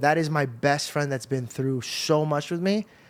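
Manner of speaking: ordinary talk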